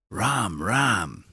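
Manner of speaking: rough, breathy voice.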